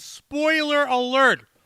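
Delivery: high-pitched pretend scream. Warning viewers that a movie review has spoilers: screaming. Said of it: "Notice how I'm screaming".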